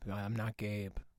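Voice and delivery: deep voice. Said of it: "it's the voice of your consciousness".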